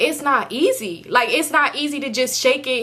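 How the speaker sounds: ordinary talk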